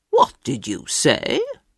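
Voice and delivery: surprised, low, taken-aback, caught-off-guard tone. The workhouse master answers a boy asking for more, surprised. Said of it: "the master said in surprise".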